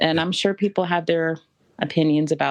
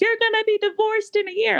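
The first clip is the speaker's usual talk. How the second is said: put-on scream, much higher. Retelling what they screamed at him from the corner, retelling a scream. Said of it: "I screamed something like".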